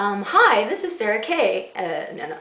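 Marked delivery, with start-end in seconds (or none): 0.2-1.7 way too perky, bright, chirpy, drawn-out voice. Trying out different ways of saying an intro, in a bright chirpy voice. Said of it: "way too, like, chirpy".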